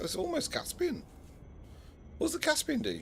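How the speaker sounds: sudden very high squeaky voice.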